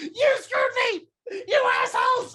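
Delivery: shrill, very high, desperate tearful crying shout. Narrating a game scene, the storyteller voices a man as a crowd dives on him, crying desperately. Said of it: "he's crying very desperately".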